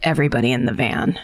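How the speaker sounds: speaking quietly. Retelling what Mom said after the kids explained what happened, quietly. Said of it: "my mom quietly goes".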